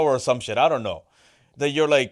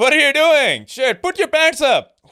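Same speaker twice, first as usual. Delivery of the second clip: put-on very high-pitched Pakistani accent; 12 semitones higher, 4 dB louder than usual. Playing a dad talking to Hassan: Pakistani dad accent. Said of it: "hit me with a fucking Pakistani dad accent".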